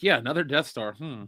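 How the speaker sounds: put-on bored, unbothered voice. Mocking a repeated Death Star plot, imitating a bored Harrison Ford. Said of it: "Harrison Ford or Han Solo is like".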